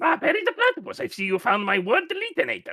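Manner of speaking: very high, loud, swooping sing-song cartoon voice. Pretending to be the inventor of a word-deleting device: Doofenshmirtz voice. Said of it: "Why do you do such a good Doofenshmirtz voice?".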